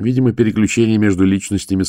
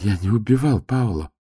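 shy, meek, timid, imploring voice; 2 semitones higher, 4 dB quieter than usual. A narrator reads Mateo answering Volin's questioning about a killing, timidly. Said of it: "сказал он робко".

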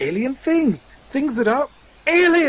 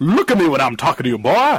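very low, deep-voiced southern US drawl; 10 semitones lower than usual. Asked to show a southern U.S. accent, doing a Foghorn Leghorn southern accent. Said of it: "Now let's hear y'all's southern U.S. accent".

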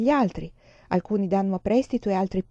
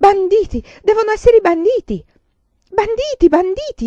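very high-pitched, very loud, shrill shouting; 12 semitones higher, 10 dB louder than usual. As the passengers lurch forward and someone falls, a passenger shouts. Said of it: "Urlò Giada lucente".

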